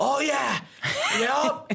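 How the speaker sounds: mocking yell, high pitched. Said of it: "My dad would be on the mat".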